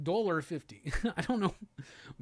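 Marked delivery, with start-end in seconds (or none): 0.0-0.9 soft Russian accent. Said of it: "I can only do a Russian accent saying".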